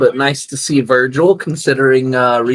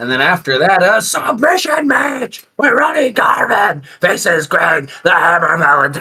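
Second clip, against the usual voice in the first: over-the-top dumb announcer voice, higher; 5 semitones higher than usual. Reading out the next match on the card: Vince McMahon announcer voice. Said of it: "I gotta do it like Vince".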